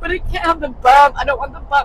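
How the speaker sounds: acted, very loud, tearful sobbing wail. Retelling what she said about the bump in her shoe, imitating her crying. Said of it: "And she's crying".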